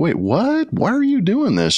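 baffled disbelieving outburst.

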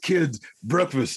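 big-fella calling voice. Repeating the other speaker's Big Q impersonation: Big Q impersonation. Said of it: "that's your Big Q impersonation".

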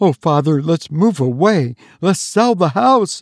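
alarmed, panic-stricken outcry. Adriana pleads with her father in a panic-stricken cry. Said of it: "cried Adriana in a panic-stricken tone".

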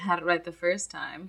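very soft, smooth, debonair delivery, mock hushed. Retelling a movie scene where a charming man answers: imitating a smooth debonair line. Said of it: "the debonair, smooth guy he is".

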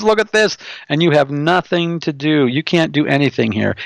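taunting, jeering, mocking demon voice. Telling a story, the speaker acts out the demon mocking the people present: mocking demon voice. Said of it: "And the demon mocked them".

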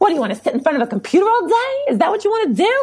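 put-on heavy New York accent, pitched very high. Speaker imitates their mother answering the graphic design idea, heavy New York accent. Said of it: "Like with that heavy New York accent".

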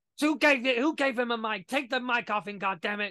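hyped-up ringside wrestling announcer voice. Retelling the commentator reacting to the mic: imitating j r selling it. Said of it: "J R again selling it".

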